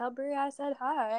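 small, geeky, nerdy little voice. Passing on Sawyer's greeting to Brea: imitating Sawyer. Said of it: "I can hear his little nerdy voice".

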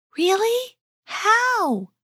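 very high, thrilled, eager, delighted voice. Osman responds to Gablia's idea, in a delighted voice. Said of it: "asked Osman in a delighted voice".

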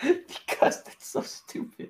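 words broken up by laughter. Explaining to another speaker why they laugh, laughing while talking. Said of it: "Why are you laughing?".

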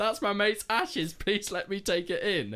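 mock very high, shrill pleading shout. Retelling a festival-goer pleading with a security guard, imitating someone shouting. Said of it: "we could just hear this guy shout".

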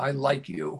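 said angrily. Speaker gives an example of words clashing with tone, angry tone. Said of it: "in an angry tone of voice".

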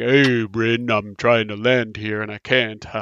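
big, bold, large dragon beast voice. Speaker describing a game quotes the dragon Aroth, big bold dragon voice. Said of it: "big red dragon with this big, bold voice".

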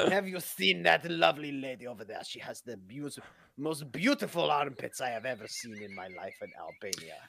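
put-on French accent. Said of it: "I'm French now".

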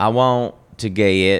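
slow, drawled-out, put-on Southern accent. Quoting a girl in line ahead of them, in a southern accent. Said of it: "This is my Southern accent".

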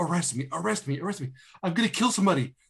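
mock crazed, unhinged ranting in a high voice. Speaker retelling a movie scene where a woman rants at a cop: imitating crazed ranting. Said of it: "where she's like talking crazy to this cop".

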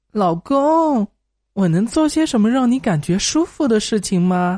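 mock coy, coquettish, sweet pleading tone. Speaker retells coaxing her annoyed husband, retelling coy pleading. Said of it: "于是我撒娇问老公".

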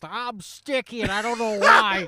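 loud, slow, drawn-out voice. Retelling how another friend imitates Trevor: imitating Trevor. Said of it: "that's Fitzgerald's impression of you".

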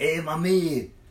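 put-on Caribbean island accent. Retelling how his buddy greeted the bartender at the bar: island accent. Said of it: "he talks that, the island talk".

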